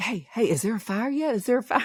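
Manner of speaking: mimicked whisper. Retelling what was whispered at the scene: imitating Amy whispering. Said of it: "Amy's sitting there whispering".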